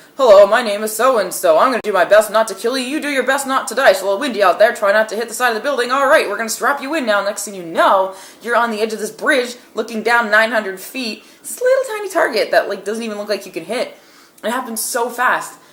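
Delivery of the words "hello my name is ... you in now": loud rapid-fire patter, rattled off with no pauses. Retelling how a clown-like guy came up and talked to them, imitating rapid talking. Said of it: "really quickly starts talking like".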